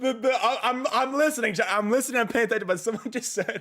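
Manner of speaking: high, loud, laughing through the words.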